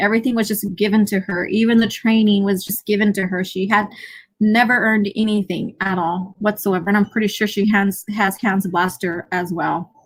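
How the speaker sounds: ordinary talk, nothing marked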